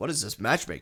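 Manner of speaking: ordinary talk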